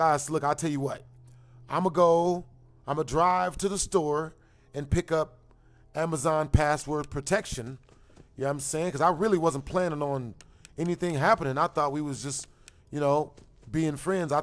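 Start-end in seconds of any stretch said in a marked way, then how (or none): none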